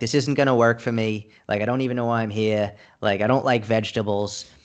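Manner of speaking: plain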